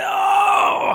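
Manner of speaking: shrill, very high yell. Narrating a fight as the canister is hit, the speaker is yelling as the mech-suit man. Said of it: "you hear him again just yell like".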